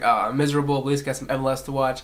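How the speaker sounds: plain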